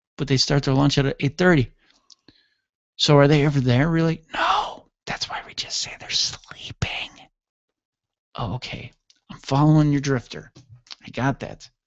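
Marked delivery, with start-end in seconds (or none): 5.0-7.1 very soft, hushed whisper. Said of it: "why are we whispering?".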